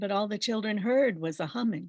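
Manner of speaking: ordinary talk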